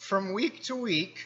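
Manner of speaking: voice cracking and jumping high on the words. Speaking to an audience about changes coming up, voice cracking. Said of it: "my voice just cracked there".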